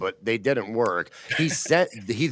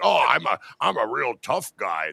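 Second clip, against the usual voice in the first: creaky, rough, slow, drawn-out put-on voice; 2 semitones higher than usual. Imitating how another person voices the speaker: Chad Zumock's voice. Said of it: "This is like Chad Zumock's voice to me".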